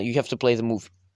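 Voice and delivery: ordinary talk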